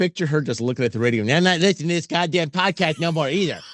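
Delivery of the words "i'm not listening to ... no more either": put-on whiny cartoon child voice. Picturing a woman looking at the radio and refusing to listen to the podcast, in a Cartman voice. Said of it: "Why did you just turn into Cartman?".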